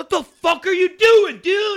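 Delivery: put-on little kid yelling, very high and very loud. Imitating him cussing out his friends: imitating a little kid yelling. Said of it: "like, a little kid yelling".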